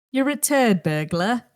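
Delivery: put-on British accent, doing its best. Asked by the other speaker to say it now, British accent. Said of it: "you gotta say it in a British accent now".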